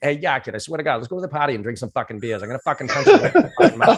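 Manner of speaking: put-on heavy, full-on old Boston accent, swooping. Imitating how he used to talk before changing his accent: imitating his old boston accent. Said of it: "I would literally talk like that".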